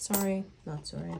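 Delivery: normal talking voice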